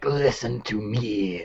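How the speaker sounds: put-on demonic voice. Narrating a story made of a demon's quotations: demon voice. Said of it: "I try to do the demon voice".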